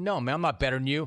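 ordinary talk

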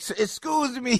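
high, slow mock yelling. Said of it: "you yell at them for some reason".

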